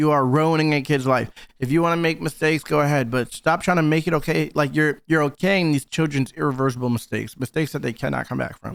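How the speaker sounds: ordinary delivery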